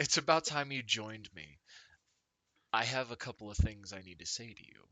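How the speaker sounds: smug, self-satisfied, pleased woman's voice. Voicing a woman on a throne of crates addressing a player: smirking woman's voice. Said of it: "she's this kind of smile, this smirk on her face".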